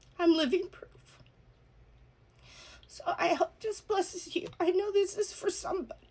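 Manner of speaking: crying, very high, tearful, breaking voice. Addressing listeners directly, the speaker talks while crying. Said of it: "I'm sorry for crying".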